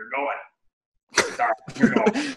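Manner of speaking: very high, swooping, sing-song delivery. Retelling what Q said while walking past the coaches: classic Q voice. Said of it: "in classic Q voice".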